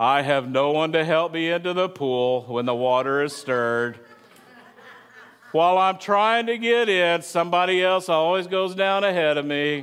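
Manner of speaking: cartoon donkey character voice. Speaking to an audience, voicing a man's reply in a Bible story: Eeyore voice. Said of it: "let's all imagine the Eeyore sound".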